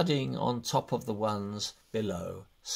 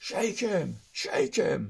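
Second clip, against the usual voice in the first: high, impatient shouting; 7 semitones higher than usual. Narrator reads the others calling out about the old villain, shouting impatiently. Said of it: "shouted the others, impatiently".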